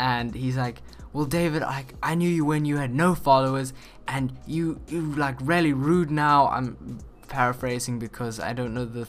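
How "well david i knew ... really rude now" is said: mock angry outburst, acted anger. Retelling a funny scene where one character gets mad at another, retelling an angry outburst. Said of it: "Jason gets like all mad".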